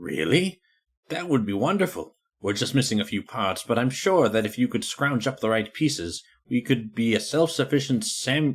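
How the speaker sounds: acted sniveling nerd character. Voicing a character replying to another speaker's offer, Half-Life scientist voice. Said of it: "I was trying to do like a Half-Life One scientist".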